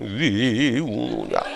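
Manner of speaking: deep echoing mountain spirit voice. Retelling the axe folktale as the mountain spirit: lowered echoing mountain spirit voice. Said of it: "목소리 깔고, 에코 넣고 합니다".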